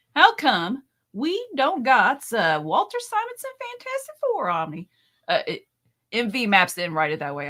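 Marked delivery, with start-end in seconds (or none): 0.1-4.8 put-on, high-pitched country twang. Joking about how it would be done now, the speaker adds a country twang. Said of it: "I just added it in my country twang".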